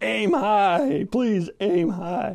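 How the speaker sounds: high-pitched yell, as loud as possible. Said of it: "started yelling as loud as he could".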